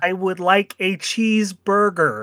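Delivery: put-on slow, generic American accent. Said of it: "the generic American voice".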